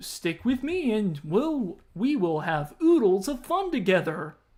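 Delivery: sing-song, swooping, bouncy pig character voice. Reading aloud, voicing VIP the pig replying to Ike: VIP pig voice. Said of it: "can stick with the voice".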